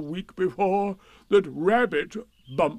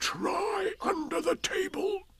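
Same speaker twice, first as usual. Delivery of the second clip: high-pitched, loud, carrying stage whisper; 13 semitones higher, 6 dB quieter than usual. With his front leg to his mouth, he offers a hint: loud whisper. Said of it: "said in a loud whisper".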